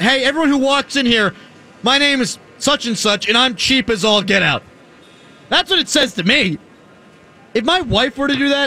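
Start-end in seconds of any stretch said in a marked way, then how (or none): none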